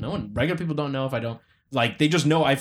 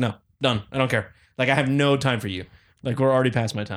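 normal talking voice

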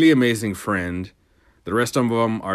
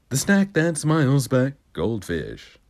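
sing-song TV commercial announcer delivery; 3 semitones higher than usual. Showing off commercial impressions: Goldfish commercial impression. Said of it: "commercial impressions".

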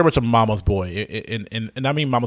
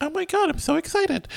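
put-on little girl voice, much higher, quieter; 3 dB quieter than usual. Describing the cancer-kid character, imitating her weird little girl voice. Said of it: "She's got that weird little girl voice going on like".

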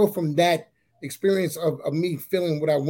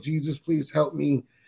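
put-on tearful, crying voice. Retelling asking God for another chance: retelling a tearful plea. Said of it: "and I'm crying".

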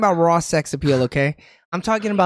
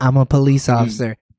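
put-on whisper, lower pitch; 5 semitones lower than usual. Retelling a movie scene where a character approaches a guard: imitating a whisper. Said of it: "He clearly came up to you whispering".

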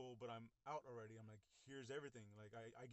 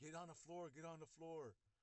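imitated yelling, raised pitch; 5 semitones higher than usual. Retelling cops drawing guns on a teenager: imitating cops yelling. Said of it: "they're yelling at me".

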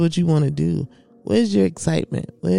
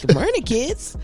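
mock overexcited teacher voice, higher pitch; 7 semitones higher than usual. Retelling a teaching video: imitating fake excitement for kids. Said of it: "tried to fake being excited about teaching".

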